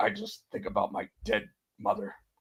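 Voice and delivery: breathed out fully, completely straight, no inflection. Retelling an interview answer about keeping a straight face: imitating Liam Neeson's deadpan. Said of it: "such a deadpan response".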